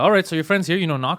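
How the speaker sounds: ordinary talk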